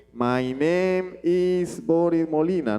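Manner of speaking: English spoken with Spanish sounds. Showing English just read aloud without the English accent: Spanish-accented English. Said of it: "No es agarrar y leer".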